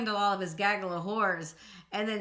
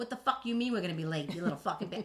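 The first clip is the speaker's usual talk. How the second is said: fake, rude, tough-guy Long Island gangster accent; 2 semitones lower, 3 dB quieter than usual. Showing co-host her Southern side, then her other side: put-on rude Yankee voice. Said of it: "That is my Yankee".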